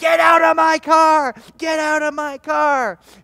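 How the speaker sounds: slow, very loud, drawn-out screaming. Retelling an old lady's demand to men in her car: imitating screaming. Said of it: "starts screaming".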